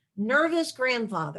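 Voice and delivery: ordinary talk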